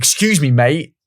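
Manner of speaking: courteous, polite tone with a passive-aggressive pointed edge. Retelling a former colleague asking someone in a pub walkway to move: imitating Callum, polite passive-aggressive. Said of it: "polite, passive-aggressive way".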